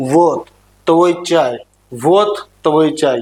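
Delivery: menacing, threatening put-on Russian accent. Imitating how a russian man talks: menacing russian accent. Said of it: "रशियन आदमी जब बोलता है ना तो वो ऐसा लगता है जैसे डरा रहा हो".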